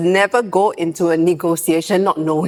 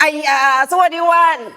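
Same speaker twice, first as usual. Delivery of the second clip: put-on, shrill, loud, very high alien voice; 9 semitones higher than usual. Retelling what she said to them: loud alien voice. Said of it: "she went with the loudest alien voice".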